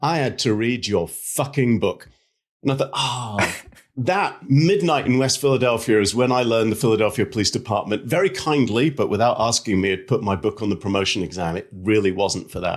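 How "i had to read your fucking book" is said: mock, venom-laced, venomous tone. Speaker quotes a man who leaned in toward him, retelling a venomous remark. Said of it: "with clear venom in his voice".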